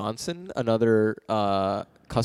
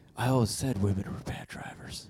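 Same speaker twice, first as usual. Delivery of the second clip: dead-calm, hushed near-whisper; 7 dB quieter than usual. Retelling a passenger's line to the driver in a movie scene, retelling a very calm remark. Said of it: "he says very calmly".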